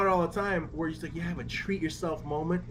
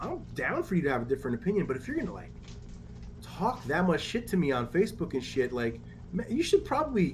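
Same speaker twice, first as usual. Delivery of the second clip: plain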